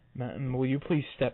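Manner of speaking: frightened, meek, scared, timid little voice. Telling a story, quoting own past words to a woman: retelling in a scared voice. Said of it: "in a voice of the biggest scared pussy".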